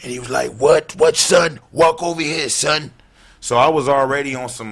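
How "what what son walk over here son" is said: put-on streetwise New York accent, pitched up. Retelling a confrontation, imitating the other man's New York speech. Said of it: "That impression is on point".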